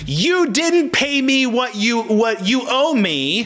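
acted-out scream. Illustrating how someone might scream at you, mock screaming. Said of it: "If someone was screaming at you".

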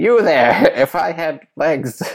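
dragged out very slowly, smug, smarmy drawl. Doing a quick bit, then calling it an impression: Tim Lai impression. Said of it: "that's an impression of Tim Lai's".

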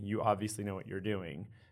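ordinary delivery

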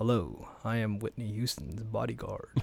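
low, flat monotone with inflection removed. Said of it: "I was doing the piece like this".

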